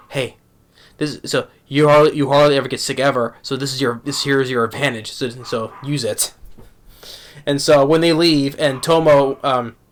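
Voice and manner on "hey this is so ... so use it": put-on whispering. Retelling an anime scene where one character secretly advises another: imitating a whisper. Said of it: "Mizuzu goes and whispers to".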